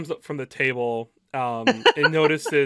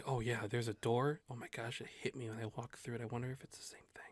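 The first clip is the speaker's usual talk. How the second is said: very quiet, hushed whisper; 2 semitones lower, 17 dB quieter than usual. Voicing tavern patrons talking about doors: whispering patrons. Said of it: "whisper, like, whisper".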